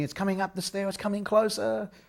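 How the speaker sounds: put-on play-acted high, panicked, frightened girlish screaming. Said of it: "So they were screaming".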